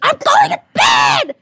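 put-on furious scream, very high, loud, drawn out. Retelling the uncle storming out of the room, imitating someone shouting angrily. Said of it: "he just started screaming".

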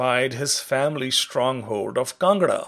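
plain reading voice

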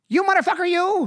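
very high, loud shouted outburst. Doing a one-phrase impression when asked: Joe Pesci impression. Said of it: "I have a Pesci".

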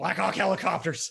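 put-on ranting radio host voice. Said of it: "say what you exactly just said in an Alex Jones voice".

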